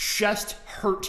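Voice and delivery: ordinary talk, nothing marked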